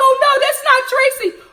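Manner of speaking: put-on very high, loud, heartbroken, crushed disbelief. Retelling a younger sister's reaction to the episode: imitating sister heartbroken. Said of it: "Heartbroken, heartbroken".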